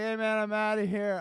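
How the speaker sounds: put-on high, drunken, tipsy voice. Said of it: "Drunk as shit".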